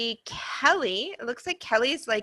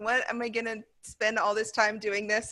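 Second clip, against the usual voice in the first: ordinary talk, nothing marked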